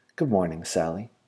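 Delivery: ordinary delivery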